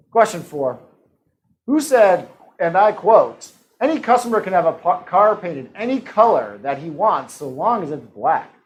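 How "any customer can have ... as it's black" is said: ordinary talk, nothing marked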